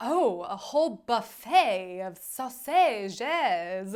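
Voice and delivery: put-on slow, drawn-out, weird, vaguely French accent. Retelling something Kidda said, imitating Kidda's weird French-like voice.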